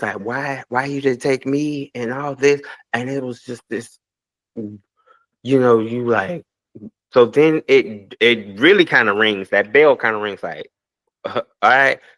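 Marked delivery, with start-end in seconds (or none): 0.2-1.9 put-on tearful crying, pleading voice. Retelling a crying grandma's words while kneeling at her lap: imitating someone crying. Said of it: "and she's crying".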